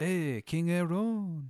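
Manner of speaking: terrible mock French accent. Retelling armed soldiers waking someone at night, in a terrible french accent. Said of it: "they all have terrible French accents".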